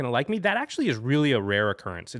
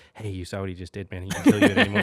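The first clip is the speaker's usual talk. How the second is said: put-on whispering, lower pitch; 9 semitones lower than usual. Retelling what a knocked-out player said to the next player: imitating someone whispering. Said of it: "whispering in Craig's ear".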